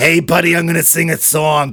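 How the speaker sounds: put-on raspy, smoker's voice. Continuing the impression after praise: raspy Jane Russell impersonation. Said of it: "She didn't have a smoker's rasp".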